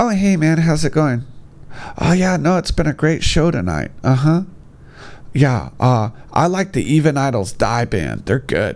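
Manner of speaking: mocking put-on child voice. Speaker acting out how they talk at a show: imitating the kid in class. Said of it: "they sound like the kid in class".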